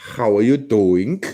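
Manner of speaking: put-on German accent. Told to say the Jersey greeting with a German accent, trying it. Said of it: "You say it with a German accent".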